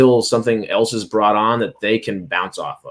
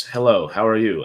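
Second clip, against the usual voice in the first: put-on stoic, flat delivery. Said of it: "Say my lines like this".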